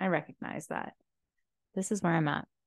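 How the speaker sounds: low energy, talking slow. Admitting low energy while talking about the past: low energy, talking slow. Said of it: "I'm talking slow".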